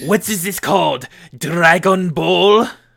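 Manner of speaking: put-on failed French accent slipping halfway into Japanese. Acting out how everyone reacted when Dragon Ball first aired, bad French accent. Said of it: "That sounded like a mix between Japanese and French".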